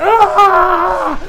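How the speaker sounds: high, loud cry of pain.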